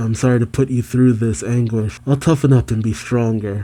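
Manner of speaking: ordinary delivery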